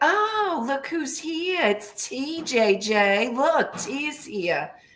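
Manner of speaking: very slow, high, drawn-out and condescending. Retelling how Rhonda greeted them: imitating a condescending tone. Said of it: "she used to say it very condescending".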